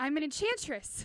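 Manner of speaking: bold, proud, confident voice from the chest. In costume as an enchantress, announcing herself with confidence. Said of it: "I should probably say that with more confidence".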